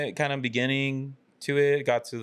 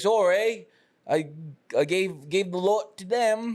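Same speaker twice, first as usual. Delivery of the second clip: very slow, stammering, pitched-up cart lady voice; 6 semitones higher than usual. Retelling what the snack-cart seller said about selling out: impression of the cart lady. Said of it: "That's a pretty good impression".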